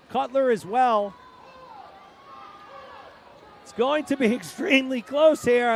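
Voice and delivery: voice cracking. Calling a close swimming race finish, voice cracking. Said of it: "My voice is cracking".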